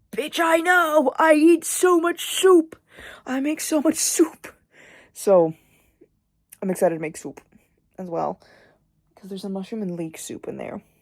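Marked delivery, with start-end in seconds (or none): 0.2-4.5 high, slow, exasperated retort. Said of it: "and I'm like".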